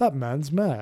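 put-on British accent. Recounting a documentary scene, Chewie in a British voice. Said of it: "Chewie just says in a British voice".

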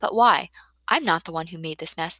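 ordinary delivery

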